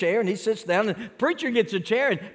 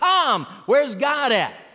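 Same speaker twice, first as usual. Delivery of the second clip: put-on sudden, high shout like a preacher; 5 semitones higher, 3 dB louder than usual. Telling a story, the speaker acts out the preacher shouting in church. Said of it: "the preacher shouts".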